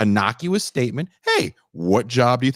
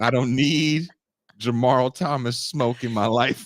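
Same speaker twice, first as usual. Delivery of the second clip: ordinary talk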